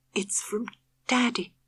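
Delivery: hushed soft whisper, barely audible, slightly high. Reading a story aloud, a mother answering her daughter: whispering. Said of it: "Her mother whispered".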